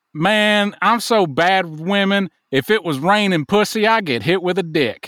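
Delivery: put-on Southern accent. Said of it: "He would say".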